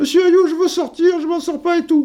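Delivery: tiny, very high-pitched little voice. Retelling a teammate asking the coach at half-time: Jackie Renoir's small voice. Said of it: "il a une petite voix comme ça".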